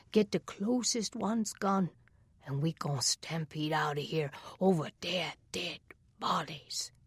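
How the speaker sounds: in a whisper. Reading a story aloud, a character plotting an escape: whispering. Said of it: "Treehouse was saying in a whisper".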